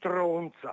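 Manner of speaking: low, muttered delivery. Retelling turning away after an argument at a clinic desk: retelling a muttered insult. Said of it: "ho detto sottovoce".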